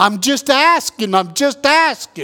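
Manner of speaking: put-on heavy New York accent. Recalling a stranger overheard in New York after 9/11, thick New York accent. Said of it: "in that thick New York accent".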